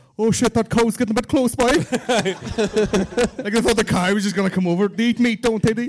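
terrible, badly done put-on Cork accent. Retelling city people from Cork at a country wedding: terrible Cork accent. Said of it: "That's a terrible Cork accent".

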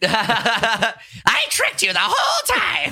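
very high, swooping goblin creature voice. Joking that a man is secretly the Goblin King, revealing the trick: goblin voice. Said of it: "Is that your goblin voice when you do goblin?".

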